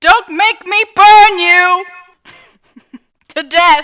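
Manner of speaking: very loud, high-pitched, menacing, intimidating yell. A player's character threatens someone who shut them out, intimidating yell. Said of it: "I'm I'm yelling intimidation".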